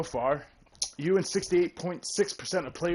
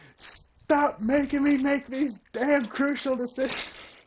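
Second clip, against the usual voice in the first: mock screamed rant, very high and full-throated; 10 semitones higher than usual. Retelling what was shouted during the trial with the mic off: imitating own screaming. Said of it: "I was screaming".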